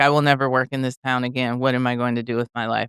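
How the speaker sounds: usual speaking voice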